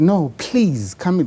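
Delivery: mock, slow, drawn-out begging tone. Retelling how a friend begged him to join an audition: imitating a friend begging. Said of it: "he begged me".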